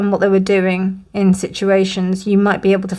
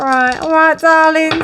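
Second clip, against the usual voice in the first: put-on Cockney accent with pitched-up voice; 8 semitones higher, 4 dB louder than usual. Laying out piles, the speaker slips into fortune-teller mode with a Cockney accent. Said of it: "gone into proper fortune teller mode with my Cockney accent".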